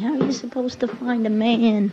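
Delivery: loud yelling voice. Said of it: "My mother's always yelling at me".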